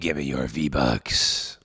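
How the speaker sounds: very deep, very low, raw-throated villain voice. Remarking that his voice is raw, the speaker makes a demand in a villain voice. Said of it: "I kind of sound like a villain".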